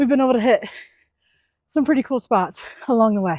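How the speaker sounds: high-pitched, winded, out of breath. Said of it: "I'm so out of breath".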